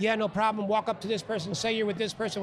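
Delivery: ordinary delivery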